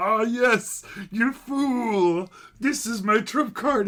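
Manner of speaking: high, loud gloating villain voice.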